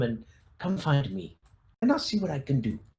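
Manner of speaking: acted-out whisper. Quoting what a man said to listeners, retelling his whisper. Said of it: "He kind of whispers".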